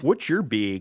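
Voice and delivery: put-on Wisconsin-sounding accent. Speaker, tired of exaggerated accents, mocks how people talk in Wisconsin: exaggerated Wisconsin accent. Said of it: "Or when you're in Wisconsin and you say".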